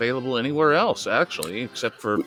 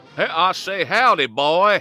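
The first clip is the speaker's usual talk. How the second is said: loud, pitched-up character voice; 8 semitones higher, 5 dB louder than usual. Greeting the host in a Foghorn Leghorn voice. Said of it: "my fellow Leghorn".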